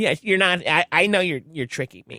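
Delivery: scolding, telling-off voice. Retelling what his mom said about a photo, imitating his mom. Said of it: "Your mom's voice sounds very different".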